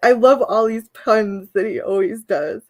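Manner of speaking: laughing while speaking. Speaker explains what set her off, giggling while talking. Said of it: "I'm giggling at".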